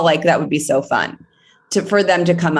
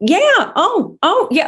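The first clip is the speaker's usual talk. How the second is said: musing, thinking-aloud tone, slightly higher pitch. Showing how Rachel sounds while thinking: imitating Rachel thinking. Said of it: "her going like".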